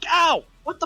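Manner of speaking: pretending to be hurt. Showing how a character might react to a pulled muscle: acting out pain. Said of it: "Or you might go like".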